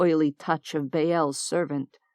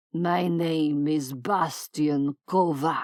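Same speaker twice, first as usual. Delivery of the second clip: growling voice. Reading a story aloud, the captor gives his name: growled. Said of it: "the man growled".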